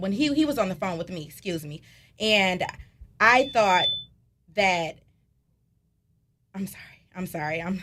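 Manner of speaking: overcome, emotional, faltering, struggling to get words out. Recounting a brother's phone call from jail, emotional, struggling to speak. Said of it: "this situation is just very emotional for me".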